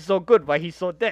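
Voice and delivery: normal talking voice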